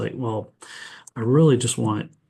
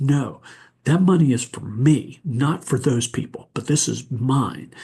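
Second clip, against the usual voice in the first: put-on, a bit louder, pushing back; 3 semitones higher than usual. Retelling how he refused the offered money: imitating a raised voice. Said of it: "he kinda raised his voice".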